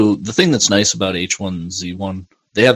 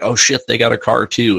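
half-called, partly raised yell; 3 semitones higher than usual. Retelling yelling to a teammate on TeamSpeak after being killed: retelling own yell. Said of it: "I'm yelling at him on TeamSpeak".

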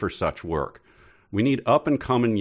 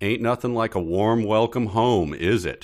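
mocking, ironic, sarcastic tone. Retelling a character's line about a welcome home: sarcastic line.

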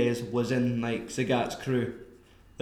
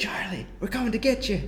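put-on whisper, pitched higher; 8 semitones higher than usual. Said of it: "don't whisper".

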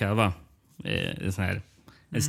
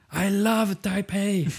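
mock very high, full-throated roaring yell; 12 semitones higher than usual. Speaker describes a man standing there and retells his roar. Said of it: "står han där och vrålar så här".

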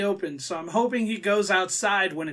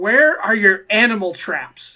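loud, winded voice, out of breath; 8 dB louder than usual. Retelling a man who ran into a store asking the cashier: imitating someone out of breath. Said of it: "Almost out of wind".

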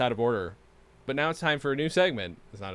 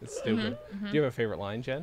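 ordinary talk, nothing marked

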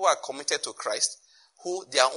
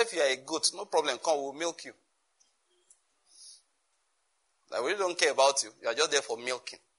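mock derisive, scoffing, sneering delivery; 5 dB quieter than usual. Retelling what a man of God once said: imitating a mocking tone. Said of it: "the way he said it was like mockery".

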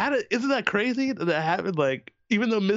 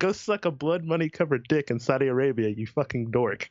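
usual speaking voice

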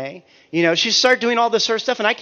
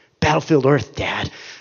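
mock teasing, needling nagging, lower; 3 semitones lower than usual. Retelling how a daughter needles her dad: imitating daughter needling. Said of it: "she begins to needle me".

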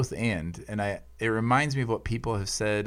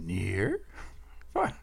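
monster voice with pitch swooping all over; 4 dB quieter than usual. Co-host joins the joking about impressions and repeats the bit in a Grover voice. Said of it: "That was definitely Grover".

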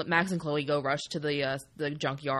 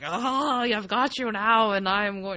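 very slow gloating villain voice; 7 semitones higher, 5 dB louder than usual. Describing a game character's change, imitating a stereotypical villain. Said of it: "the stereotypical villain".

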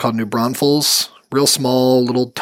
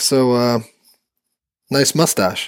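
much slower, mock-deadpan delivery. Retelling what a man said when he walked up, deadpan imitation of Brian. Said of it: "super deadpan".

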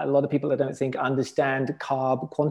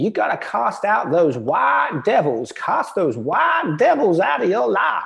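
loud, swooping, terrible put-on Southern accent; 7 semitones higher, 5 dB louder than usual. Retelling what a good friend said to him, terrible Southern accent. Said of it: "I do a terrible Southern accent".

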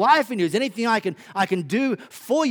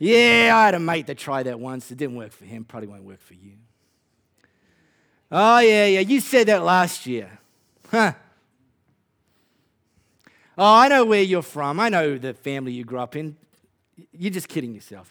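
put-on Australian accent in a low voice; 6 semitones lower, 4 dB louder than usual. Acting out hecklers in the crowd, the speaker does an aussie accent. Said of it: "I have to do it in Aussie accent".

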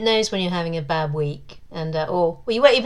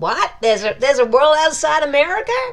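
put-on American accent, loud, high pitch, baffled; 9 semitones higher, 6 dB louder than usual. Joking to another speaker about the Kindle Vela team, in a mock American accent.

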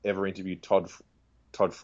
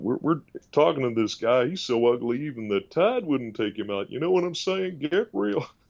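put-on, pitched-up Texan accent throughout; 5 semitones higher than usual. Doing a TV host who is a Texan: Doctor Phil voice. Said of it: "all these Texan sayings".

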